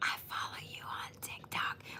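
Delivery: very soft, quiet, breathy whisper. Retelling a cashier who leaned over the counter: imitating a whisper. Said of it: "she whispered".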